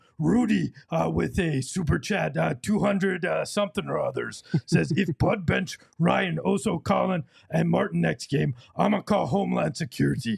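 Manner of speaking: gruff, rough, creaky puppet monster voice. Reading viewers' super chats aloud in the Nookie Monster voice. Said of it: "I will read them in the Nookie Monster voice".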